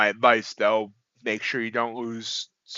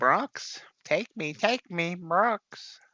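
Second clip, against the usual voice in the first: very slow, high, drawn-out, squawky parrot voice; 8 semitones higher, 4 dB quieter than usual. Voicing a blue candle that is trying to push back up, in a parrot-like voice. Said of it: "sounds like a parrot".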